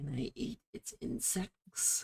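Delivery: slow, very drawn-out whispered demon weasel voice. Voicing the demon weasel speaking into a player's ear: demon weasel voice. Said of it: "The demon weasel says in your ear".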